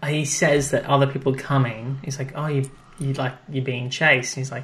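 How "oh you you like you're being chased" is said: ordinary talk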